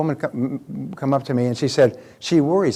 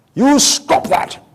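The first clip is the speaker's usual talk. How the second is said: raised, put-on British accent; 11 semitones higher, 7 dB louder than usual. Recalling what your British father would say to you all the time, imitating father's British accent. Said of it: "with his British accent".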